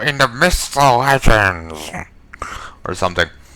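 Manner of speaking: loud, drawn-out, weird, distorted warped voice. Speaker wondering aloud where a story detail came from, in a weird warped voice. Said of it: "warped my face and did a weird voice".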